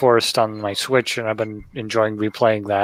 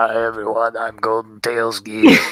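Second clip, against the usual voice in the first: imitated scratchy, sick-sounding throat voice. Describing recording videos while sick, imitating a scratchy sick throat. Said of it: "a really scratchy throat and be like".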